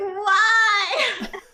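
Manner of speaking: heartbroken, high, drawn-out scream through sobs. Retelling the moment he confirmed it was true, acting out past sobbing scream. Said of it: "sobbing and screaming".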